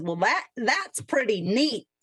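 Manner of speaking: normal, plain voice. Quoting what the guy in a video always says: imitating the Nature Walk guy. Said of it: "he always says".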